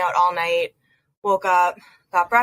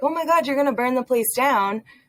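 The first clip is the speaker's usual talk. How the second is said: mock jokey teasing, laughing, higher-pitched joking tone; 5 semitones higher than usual. Retelling a joking remark about a kitchen fire: retelling a laughing joke. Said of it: "fully laughing when I said it".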